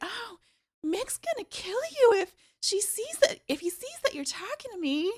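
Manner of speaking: very high, loud, squeaky put-on voice. Describing a character, speaker acts out her line in a very high-pitched voice. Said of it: "Very high pitched voice".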